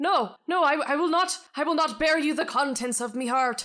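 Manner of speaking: loud, high-pitched shout.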